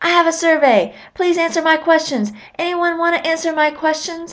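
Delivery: high, loud pretend yelling, projected far.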